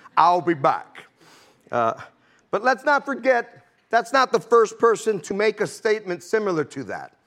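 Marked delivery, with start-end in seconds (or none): 0.1-1.0 put-on Austrian accent, put on. Quoting a famous movie line: Arnold Schwarzenegger impression. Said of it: "in his Austrian, uh, accent".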